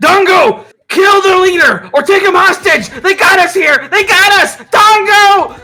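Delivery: shrill, very high, very loud goblin screech. Game master voices a goblin in a fight, yelling in a goblin voice. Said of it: "he yells".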